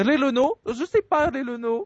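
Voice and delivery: Italian-accented voice.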